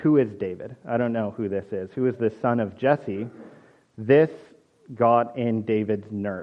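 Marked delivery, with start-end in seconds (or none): none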